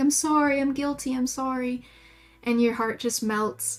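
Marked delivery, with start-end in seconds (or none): 0.0-1.8 mock guilty cowering apologetic voice. Voicing a sensitive dog that cowers after a scolding: voicing a guilty dog. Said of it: "he will do that thing where".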